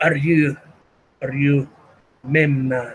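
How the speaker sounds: put-on thick Arabic accent. Voicing a courier asking another character if he is Memnon, thick Arabic accent. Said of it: "in a very thick, very thick uh, Arabic accent".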